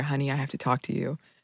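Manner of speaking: soft, hushed half-whisper, close and intimate. Retelling how a teacher told her the news: imitating a half-whisper. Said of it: "whispered in my ear".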